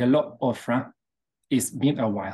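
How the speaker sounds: put-on middle eastern Arabic accent. Retelling a voice she heard in her ear, the speaker does a Middle Eastern Arabic accent. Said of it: "this Middle Eastern Arabic accent type of thing".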